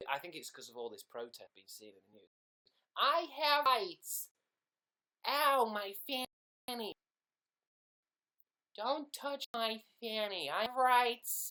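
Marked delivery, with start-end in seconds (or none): 3.0-11.5 put-on American accent, very high, slow, very loud, shrill. Showing the best way to do an impression of America: put-on American accent. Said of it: "the best way to do an impression of America".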